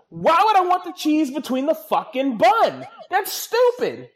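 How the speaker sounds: very high, shrill, loud shouted rant. Speaker ranting to the audience, yelling. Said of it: "I'm sorry I'm yelling".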